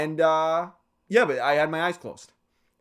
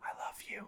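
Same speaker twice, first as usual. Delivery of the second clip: whispering, much quieter. Recounting leaning in close to a guy's ear; retelling a whisper. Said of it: "I whispered in his ear".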